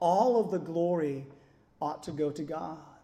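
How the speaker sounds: heavy, emphatic stress placed on the word all. Speaker repeats the line to emphasize a word: strong emphasis on all. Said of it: "Let me emphasize that word all".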